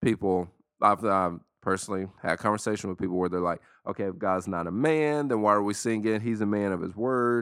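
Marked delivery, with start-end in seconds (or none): none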